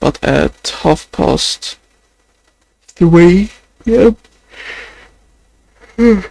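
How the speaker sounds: yawning while talking. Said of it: "Sorry, I'm just yawning".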